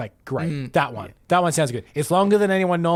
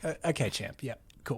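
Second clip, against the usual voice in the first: put-on breathy whisper, patronizing and condescending; 3 semitones lower, 12 dB quieter than usual. Showing a dismissive reply to someone's accusation: condescendingly dismissive. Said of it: "super condescendingly dismissive of people".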